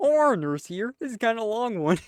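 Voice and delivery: bad, high-pitched cartoon frog puppet voice. Reading a nurse's Reddit post aloud, bad Kermit the Frog voice. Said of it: "You suck at Kermit".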